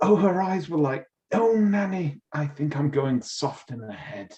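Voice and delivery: camp, slightly high voice. Retelling a film scene where the architect goes all weird: imitating William going all weird. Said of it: "he goes all weird and says".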